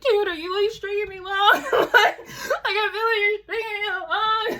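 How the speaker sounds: very high, frantic, hysterical voice. Retelling confronting someone who kept stalling on helping, retelling a hysterical plea. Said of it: "Like hysterical".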